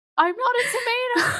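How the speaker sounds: very high, indignant crying wail.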